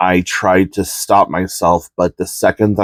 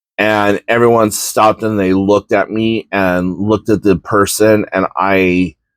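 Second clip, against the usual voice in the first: normal talking voice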